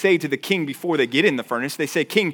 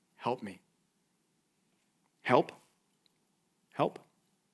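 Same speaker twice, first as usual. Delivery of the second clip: put-on tiny, small child's voice, quieter; 6 semitones lower, 13 dB quieter than usual. Recalling small children on a playground asking for help, in a tiny little voice. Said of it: "their tiny little voices".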